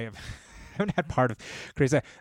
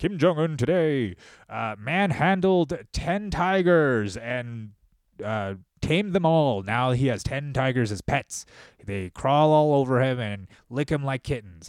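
grand, commanding, authoritative announcer voice; 2 semitones higher than usual. Retelling a story in a booming authoritative voice. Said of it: "this booming authoritative voice of like".

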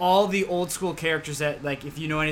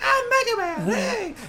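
put-on very high, lisping toddler voice with no emotion; 3 dB louder than usual. Recounting a game voiced by the company president's son: Mega Man voice with slight lisp. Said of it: "he has a slight lisp".

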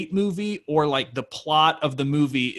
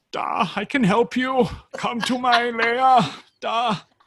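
put-on German accent, much higher; 10 semitones higher, 3 dB louder than usual. Retelling a film's plot, speaker voices the guy offering the stranded people help, bad german accent. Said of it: "that was the most offensive German impression I've ever heard".

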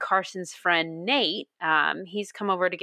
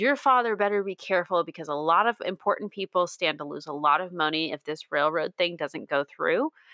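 plain

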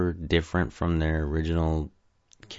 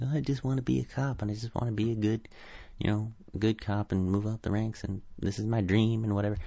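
put-on high-pitched, childish little kid voice; 5 semitones higher, 4 dB quieter than usual. Mocking a movie character who acts like a nineteen-year-old: childish Casey Jones impression. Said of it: "he acts like a nineteen-year-old".

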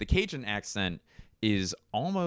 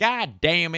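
loud put-on Southern US accent, pitched very high; 11 semitones higher, 7 dB louder than usual. Speaker listing different southern accents on a drive, southern accent. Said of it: "there's a few different southern accents".

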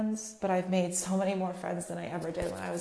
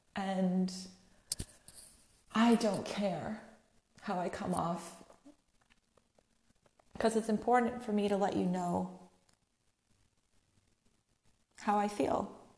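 tearful voice, crying while speaking. Saying why it matters to share these feelings: crying while talking. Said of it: "I'm crying in my dining room".

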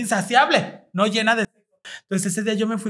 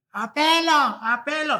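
high, yelled calling shout; 6 semitones higher than usual. Explaining how the group got its name: retelling own past shout. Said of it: "yo fue la que empecé a gritar".

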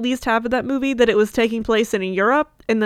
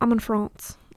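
put-on British accent, quieter; 4 dB quieter than usual. Retelling a Zoom interview, imitating Kate Moss answering. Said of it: "I'm literally gonna do my impression of this".

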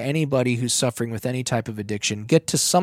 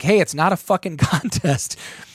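loud yelled call, pitched up; 5 semitones higher than usual. Retelling a sled relay race, calling to a passing girl: imitating own past yell. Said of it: "yell out to her".

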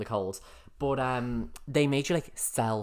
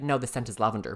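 normal talking voice

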